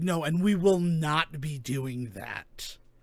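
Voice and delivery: put-on, slow, scornful, dismissive, disdainful voice. Retelling a phone call, quoting the woman's reply to the question: imitating a disdainful woman. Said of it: "I could hear the disdain in that woman's voice".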